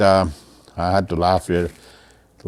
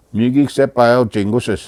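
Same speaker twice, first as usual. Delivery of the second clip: plain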